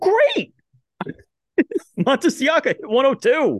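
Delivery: very high, swooping, squeaky burst of excitement. Talking baseball, reacting to pitch speeds, squeaky excited voice. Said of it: "What just happened to your voice?".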